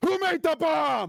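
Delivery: very furious, very high-pitched angry outburst. Voicing a red sash after a bomb killed his comrades, super pissed off. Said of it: "they're immediately now like super pissed off".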